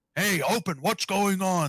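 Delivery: very slow, drawn-out, high-pitched shout. Voicing guards trying to force open a wagon: shouting. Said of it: "they start to shout".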